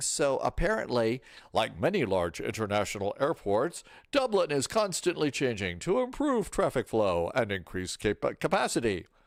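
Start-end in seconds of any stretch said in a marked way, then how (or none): 1.5-9.0 dripping, mock-earnest sarcasm in swooping sing-song. Reading out a shared item about Dublin airport to listeners, in a sarcastic voice. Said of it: "I'll stop the sarcastic voice here".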